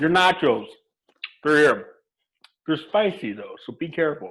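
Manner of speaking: words spoken while chewing with a full mouth. Bringing someone their nachos, speaking with a mouth full. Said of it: "you were speaking with your mouth full a second ago".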